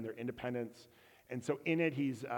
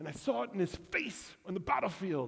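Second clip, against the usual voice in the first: attempted Scottish accent, pitched up; 7 semitones higher than usual. Retelling a film scene where Robert the Bruce talks with his dad, attempted Scottish accent. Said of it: "It's my attempt at a Scottish accent".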